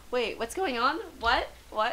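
normal talking voice

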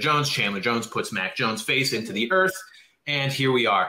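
ordinary delivery

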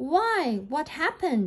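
crying out in horror. Beauty kneels beside the dying beast under the rose bush: horrified cry. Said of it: "cried Beauty, horrified".

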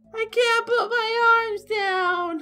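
put-on terrible squeaky little-kid voice, very high. Joking with another speaker about a film, doing a terrible A Christmas Story impression. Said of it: "That was a terrible impression".

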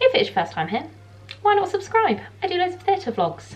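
rushed, very high-pitched rapid-fire chatter. Opening a theatre vlog to viewers, the speaker is talking very fast. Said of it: "I'm talking so fast".

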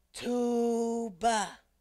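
very hushed, quiet, drawn-out, lingering delivery. Presenter leading listeners to say an instrument name, very quietly. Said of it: "let's say tuba very quietly".

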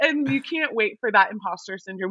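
normal talking voice

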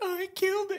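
very high-pitched, whiny, squeaky voice. Retelling what a killer said, imitating a high-pitched voice. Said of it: "He had, like, the high-pitched voice".

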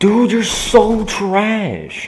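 drawn-out, loud, high, slow, furious raging yell.

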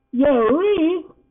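very high, loud, frightened outcry. Reading a story, a character calls after another who is walking away: crying out fearfully. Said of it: "Poppy cried, her fearful trance now broken".

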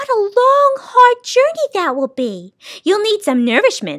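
high exclaiming cry. Narrator voices her replying to Milo, crying out. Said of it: "she cried".

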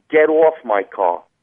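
Jersey-accented delivery. Correcting another speaker's accent attempt, demonstrating a New Jersey accent. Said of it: "it would be a little bit more like".

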